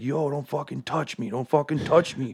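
play-acted high, mild, scream-style shout. Retelling how a buddy reacted in a scuffle: imitating a friend screaming. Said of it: "my buddy starts screaming at the top".

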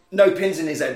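ordinary delivery

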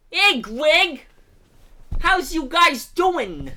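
put-on very loud, very high, thick, drawn-out Brooklyn accent. Imitating an actor in the musical: Buddy Hackett Brooklyn accent. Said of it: "the most Brooklyn accent I've ever heard".

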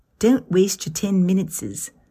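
put-on Australian accent, laid on thick. Quoting a woman's best gardening advice, imitated Australian accent. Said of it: "I'll try to conjure her Australian accent".

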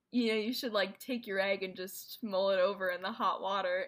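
ordinary delivery

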